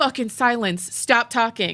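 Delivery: imitated harsh, attacking manner. Retelling what one man told another: imitating an attacking command. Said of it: "He's commanding him to stop talking".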